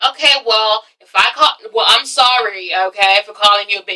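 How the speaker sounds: sarcastic, snide, insincere, grudging tone. Retelling a quarrel from a show, imitating a sarcastic apology. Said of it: "Nene does the sarcastic apology".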